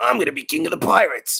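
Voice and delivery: high, rough American voice. Complaining about the English dub, imitating the American Luffy dub voice. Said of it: "with the American voice actress, she just goes".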